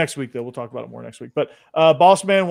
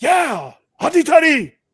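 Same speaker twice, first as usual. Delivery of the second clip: put-on German accent, much higher pitch; 13 semitones higher, 5 dB louder than usual. Imagining a football fan in Munich, imitating a German accent. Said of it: "supposed to be German".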